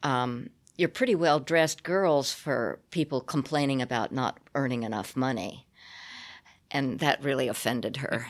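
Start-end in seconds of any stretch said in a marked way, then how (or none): none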